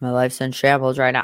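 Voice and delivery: mumbling a little. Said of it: "he kinda mumbles a little bit".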